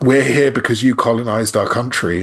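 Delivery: plain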